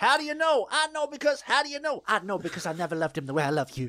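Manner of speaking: high, loud trailer-style delivery. Quoting a movie trailer line: Jodie Foster impression. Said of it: "Perfect Jodie Foster impression".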